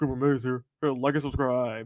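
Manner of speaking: flat, automated, machine-like recorded message voice. Show host plays a quick message from Cooper Mays, Cooper Mays automated voice. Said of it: "So I do Cooper Mays automated voice".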